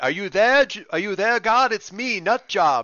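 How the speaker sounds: comical, loud, high-pitched call. Voicing an NPC speaking to the ceiling, calling out to God. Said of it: "he's kind of like".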